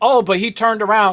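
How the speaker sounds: ordinary talk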